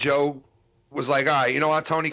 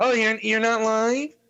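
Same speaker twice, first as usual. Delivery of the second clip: put-on twelve-year-old voice, higher pitched; 8 semitones higher than usual. Imitating Tony acting like he doesn't know the stream is live: Tony's twelve-year-old voice. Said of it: "like in his twelve-year-old voice".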